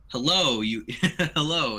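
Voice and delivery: thick, gurgling, burbling monster voice. Narrating a scene, voicing a creature speaking inside the listeners' heads, thick burbling voice. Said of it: "says a thick, burbling voice".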